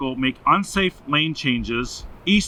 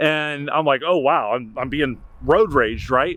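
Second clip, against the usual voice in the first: plain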